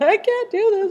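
put-on crying. Recounting Aiden's birth, acting out their own past crying during labor. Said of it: "I'm crying and I'm like".

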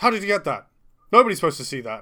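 high, very loud, yelled outburst. Voicing a character caught out by a player: shouting in character. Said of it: "and just shouts".

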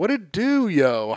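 put-on nineties hip-hop voice. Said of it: "it started being a little urban to full-on A A V E".

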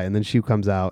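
ordinary delivery

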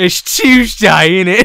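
fake British accent, loud and slow. Describing an internet joke about british people, in a mock british accent. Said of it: "British people be like".

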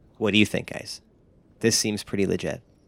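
hushed low voice. After closing the sitting-room door, a character confers with the group in a hushed tone. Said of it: "in a hushed tone".

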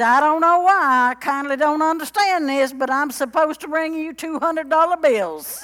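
put-on loud and high East Texas accent. Quoting his brother-in-law from East Texas at the door, imitating an East Texas accent. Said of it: "He really talked like this".

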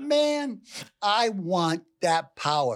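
high, slow, savouring, awed and covetous tone.

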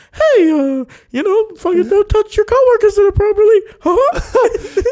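high, loud, squeaked out. Joking that Disney had Mickey Mouse warn employees about touching coworkers, doing a Mickey Mouse voice. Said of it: "they put Mickey Mouse to go like".

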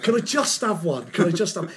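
ordinary delivery

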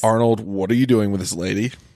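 ordinary talk

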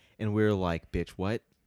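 usual speaking voice

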